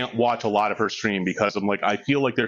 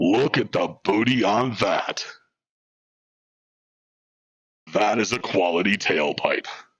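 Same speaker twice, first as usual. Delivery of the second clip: acted robotic voice. Speaker imagines a character talking to Highbeam, in Optimus Prime voice. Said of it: "I'm sure she's always wanted to hear Optimus Prime say".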